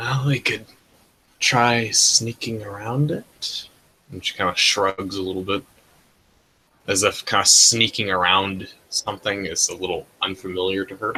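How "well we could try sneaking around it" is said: half-whispered, hushed, with barely any voice. Voicing a character who suggests sneaking around: half-whispering in character. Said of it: "in a whisper".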